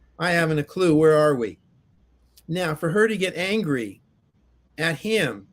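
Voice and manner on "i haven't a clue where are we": usual speaking voice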